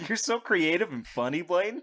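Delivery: mocking, sarcastic tone. Answering another speaker's silly joke with praise: sarcastic. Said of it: "When I said you're creative and funny sarcastically".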